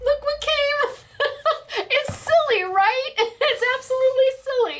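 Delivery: tearful, choked, very high voice. A creator shows subscribers a silver play button, choking up and teary. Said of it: "Don't know why I'm tearing up".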